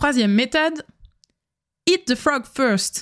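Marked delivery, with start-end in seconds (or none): 1.8-3.0 self-styled, put-on English accent. Presenting productivity methods in French, naming the third one in a put-on English accent. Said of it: "avec mon super accent anglais".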